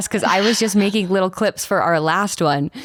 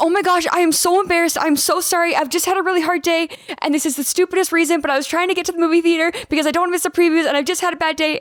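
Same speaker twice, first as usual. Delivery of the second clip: mock bawling, tearful sobbing, pitched up, embarrassed; 10 semitones higher than usual. Retelling what they said to someone after a bad day: retelling a sobbing apology. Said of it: "And I like can't stop bawling".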